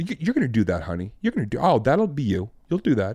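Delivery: play-acted offhand, breezy, cavalier, motherly, reassuring, sing-song. Retelling a mother predicting comedy success: imitating a very casual, cavalier tone. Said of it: "very casual, you know, like, cavalier".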